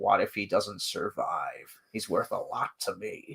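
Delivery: slow, sinister, menacing delivery. Comparing two actors' readings of a line: Jason Wingreen's sinister delivery. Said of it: "And Wingreen's delivery of that is like".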